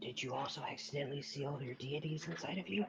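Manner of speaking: hushed whisper. In a role-play, his character leans in to another exiled character, whispering. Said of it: "he's gonna lean in with a whisper".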